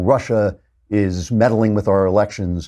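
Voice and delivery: ordinary talk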